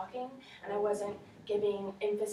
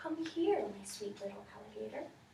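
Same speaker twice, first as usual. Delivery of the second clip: hushed, soft, gentle, feather-light half-whisper; 4 dB quieter than usual. Showing how the story line should have been said, in a gentle half-whispering voice. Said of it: "in a voice as gentle as the whispering grass".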